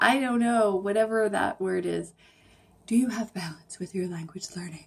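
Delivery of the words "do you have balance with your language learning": fast on-air radio announcer voice. Podcast host asking the listener a question: radio voice. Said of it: "That's my radio voice".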